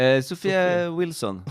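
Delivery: put-on odd, off-kilter American accent. Answering when asked her name on walking into a room: weird American accent. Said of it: "What a weird American accent you have".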